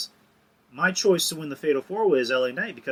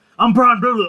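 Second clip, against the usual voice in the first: rattled off in one breath, rushed, loud, pitched up; 9 semitones higher, 9 dB louder than usual. Retelling how someone answered the question who are you: imitating someone saying it really fast. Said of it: "he just says really fast".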